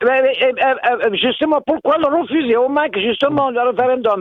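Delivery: high, heated, indignant protesting tone.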